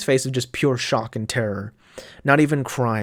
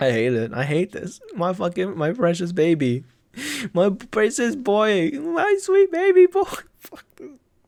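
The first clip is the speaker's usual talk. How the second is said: talking through laughter, pitched up and swooping; 9 semitones higher than usual. Reacting to a character's sad fate, laughing while talking. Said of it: "I'm, like, laughing".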